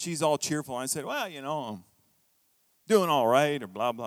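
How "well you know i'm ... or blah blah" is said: mock low-spirited, glum, half-hearted delivery. Retelling his answer to the receptionist, head down: imitating own glum reply. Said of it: "I wasn't my normal happy-go-lucky self".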